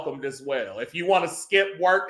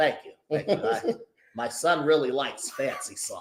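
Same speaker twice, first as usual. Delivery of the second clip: put-on soft old man voice; 3 semitones lower, 5 dB quieter than usual.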